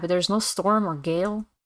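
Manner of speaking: ordinary talk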